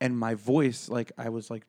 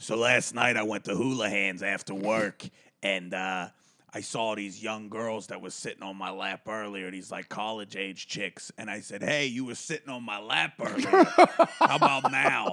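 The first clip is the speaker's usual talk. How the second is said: put-on voice of a heavy smoker. Retelling a story a man told in the dressing room; put-on smoker's voice. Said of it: "he just got this like smoker's voice".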